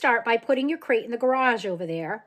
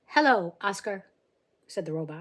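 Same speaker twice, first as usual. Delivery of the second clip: ordinary delivery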